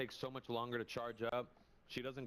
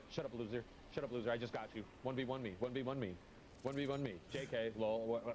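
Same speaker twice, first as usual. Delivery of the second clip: ordinary talk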